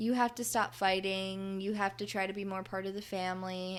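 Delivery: ordinary talk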